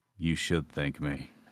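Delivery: play-acted, sultry, slow, drawn-out seductive delivery. Retelling what was said to a revived player: imitating own slow seductive voice. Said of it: "I said it a lot slower and a bit more seductive".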